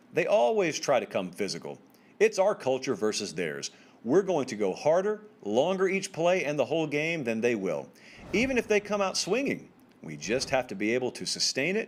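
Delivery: ordinary talk, nothing marked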